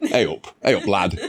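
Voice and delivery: put-on low, loutish northern accent voice. Asked what accent a man had, speaker does his northern lout voice. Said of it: "bit some some like northern".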